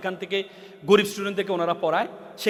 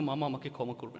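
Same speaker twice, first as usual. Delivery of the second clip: put-on male sobbing, lower and quieter; 6 semitones lower, 11 dB quieter than usual. Retelling what a man said while crying at night: imitating a man crying. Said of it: "মাথাটা নিচ করে কান্না করছে".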